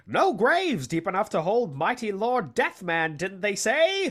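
put-on 1930s old-time radio announcer voice. Quoting Lord Deathman as he rises from the grave: Lord Deathman 1930s announcer voice. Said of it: "doing that voice that you're doing. It's just a 1930s like a radio announcer".

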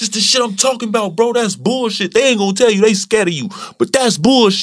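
mock, shrill, furious screaming rant, very high. Retelling venting at a teammate during a game: retelling screaming at a teammate. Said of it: "I'm screaming at the man".

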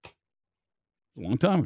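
slow, soft, dismissive drawl. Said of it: "Just don't like your tone".

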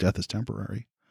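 sudden dead calm, very soft, low and hushed. A freaking-out character abruptly stops and speaks, suddenly really calm. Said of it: "In a voice that you haven't really heard come out of him, gets really calm".

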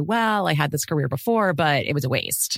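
ordinary talk

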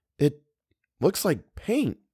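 tentative, unsure tone. A woman answers another woman's question in a story; hesitant. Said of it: "she said hesitantly".

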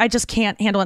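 ordinary talk

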